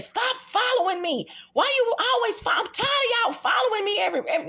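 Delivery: mock shrill, loud, high, furious woman's yelling. Retelling a story about overhearing a stranger yelling about being followed, voicing her complaint. Imitating an angry woman. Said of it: "she was very loud".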